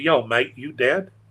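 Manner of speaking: Australian accent, a best-effort attempt. Retelling a phone call from a friend in australia: australian accent. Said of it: "that's my best Australian accent".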